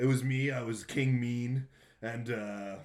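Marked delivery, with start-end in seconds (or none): none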